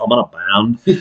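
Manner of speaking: very low, slow cartoon drone. Recalling an old band catchphrase, the speaker says it in a Beavis voice. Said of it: "I'd say it like Beavis".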